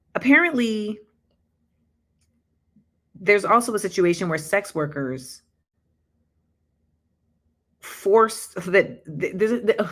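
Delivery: stuttering and tripping over words, breaking off mid-word. Reading a disturbing article aloud for the first time, stuttering. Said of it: "I'm like stuttering".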